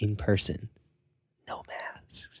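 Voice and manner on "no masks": barely audible, very slow, drawn-out whisper. Retelling a celebrity's closing remark in an interview: whispering. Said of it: "And he whispers it".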